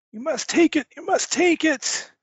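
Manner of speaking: put-on frantic, urgent, very high pleading old voice. Game master voices a priest shoving a glowing crystal at Corporal Grimm, priest voice.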